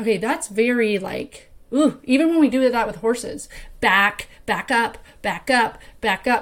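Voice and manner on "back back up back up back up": put-on harsh, pushy, bossy tone. Showing how a pushy command to horses sounds: imitating a harsh command. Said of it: "you just feel the energy coming through the speakers".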